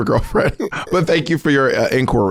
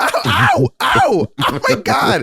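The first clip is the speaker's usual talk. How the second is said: put-on, fake pained cries and yelps; 9 semitones higher than usual. Pretending a teacher is hitting them mid-call: mock pained cries. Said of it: "Now he's hitting me".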